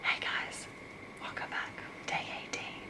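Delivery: soft, hushed whispering voice. Vlogger greeting viewers while people are home for holiday break, whispering. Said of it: "I know I'm whispering".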